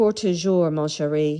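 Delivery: French spoken in a very bad Southern American drawl. Speaking french lines as a joke, with a bad southern accent on french. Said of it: "I'm going to speak French in the worst Southern accent French language you've ever heard".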